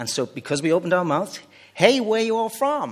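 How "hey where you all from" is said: higher-pitched, best-attempt put-on American accent. Quoting someone at a restaurant in the States, in an American accent. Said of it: "I don't do American accent, but that's my best".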